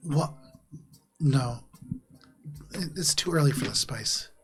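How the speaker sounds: sleepy, groggy, half-awake, just-woken-up voice. Voicing a character woken at three in the morning: groggy, just woken up. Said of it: "looks at you bleary-eyed and just goes".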